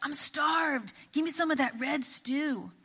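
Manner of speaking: exhausted, famished-sounding character voice, spent. Reading Genesis aloud, Esau speaking to Jacob, in Esau voice. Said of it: "That's my Esau voice".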